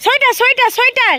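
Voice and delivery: high, loud voice calling out.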